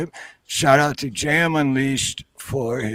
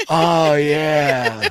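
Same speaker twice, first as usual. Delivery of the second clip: put-on slow, stoned-sounding speech; 4 dB louder than usual. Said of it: "the only difference is I'm real, really slow".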